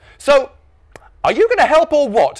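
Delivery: high rising pitch. Norm's dad asks Norm again, who won't move: voice getting higher. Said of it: "his voice getting fractionally higher again".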